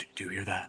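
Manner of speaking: whispering. Whispering to a party member in a cave about faint sounds: whispering in character. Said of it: "whisper to Reuven and be like".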